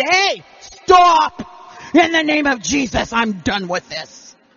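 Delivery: loud, commanding voice with authority behind it. Speaker demonstrates a command with authority behind it. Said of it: "if you put some authority about behind".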